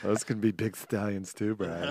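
mock campy, flamboyant put-on voice.

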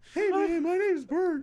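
put-on voice pushed way up, very high. Showing a friend how he sounded, imitating a high voice. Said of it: "Is that how he sounded, like, high voice?".

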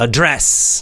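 address with stress on second syllable DRESS.

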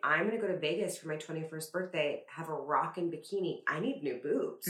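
ordinary talk, nothing marked

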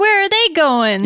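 blaring, loud, high dubbed-over voice. Describing a dubbed kissing scene, imitating the girl's loud voice. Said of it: "this loud voice comes out going".

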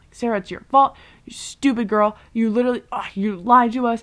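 acted angry accusation tone. Recapping a show scene, acting out a character blaming Sarah, imitating an angry accusation. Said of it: "who literally just needs to chill out".

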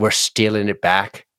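put-on Irish accent. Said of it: "I especially like your accent when you do that".

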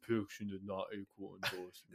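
tough action-movie hero delivery. Quoting a movie line, answering in Vin Diesel impression. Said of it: "Is that your Vin Diesel impression?".

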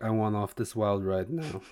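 plain

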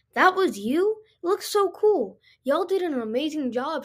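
glowing, happy, admiring warm tone. She praises the lights he just helped put up, beaming. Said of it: "she beamed".

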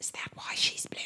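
secretive, hushed, breathy, very quiet whisper. Voicing a character leaning in to ask something: whispering. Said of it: "and he whispers".

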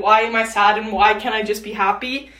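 normal talking voice

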